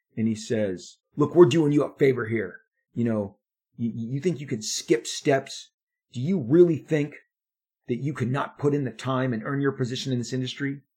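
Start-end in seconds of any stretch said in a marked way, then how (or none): 1.2-10.8 heated, raised, angry voice with pitch climbing. Retelling the editor's rebuke on the phone: imitating a raised, angry voice. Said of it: "his voice went up to a p-, point".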